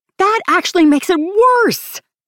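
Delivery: very high, fervent outburst. Narrator reading an overheard woman's reply to the other speaker; impassioned. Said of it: "That last impassioned statement".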